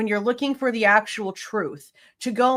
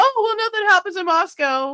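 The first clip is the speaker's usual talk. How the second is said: very high, mocking, sarcastic mimicking voice; 9 semitones higher, 4 dB louder than usual. Retelling someone's calm answer to a frightening night: mocking imitation of her response. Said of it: "your response was".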